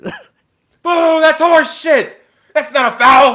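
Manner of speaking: very high, very loud, very slow jeering. Imagining being the loudest parent booing a bad call: pretend loud heckling. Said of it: "The loudest parent in the stands".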